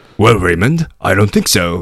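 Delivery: put-on gruff voice with a British accent. Recalling a British-accent performance, voicing Neil answering Raymond, gruff British voice. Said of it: "this kind of gruff of a guy".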